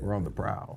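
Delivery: put-on deep voice. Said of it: "gotta talk it in your deep voice".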